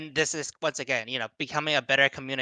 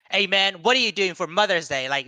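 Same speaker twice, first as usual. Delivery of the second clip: probing, pitched-up, interrogating tone; 5 semitones higher than usual. Retelling how mom's phone question sounded: imitating a very interrogation-ish tone. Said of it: "with a very interrogation-ish tone".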